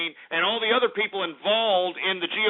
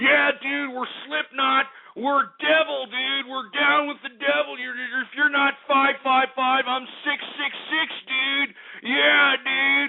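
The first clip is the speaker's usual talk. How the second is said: derisive mocking sneer in a higher-pitched voice; 6 semitones higher than usual. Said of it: "If you're gonna be sitting over here selling the fact that".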